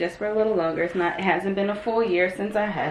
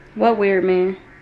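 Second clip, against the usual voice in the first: usual speaking voice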